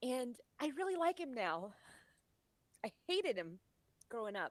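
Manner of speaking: on the verge of tears while speaking. Talking about a late father and a difficult relationship, tearing up. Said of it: "I'm tearing up".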